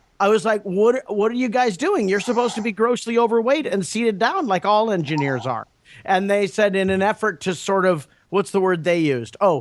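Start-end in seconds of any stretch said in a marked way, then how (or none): none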